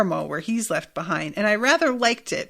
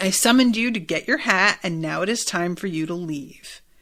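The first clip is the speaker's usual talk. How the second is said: put-on deeply rageful, furious voice. Retelling Simon ordering them to leave: imitating a deeply rageful voice. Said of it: "his voice gets bonkers here. Deeply rageful".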